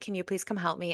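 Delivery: put-on frantic pleading tone. Retelling a call to mom for help from the car, acting out frantic pleading. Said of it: "I'm having a conniption fit here".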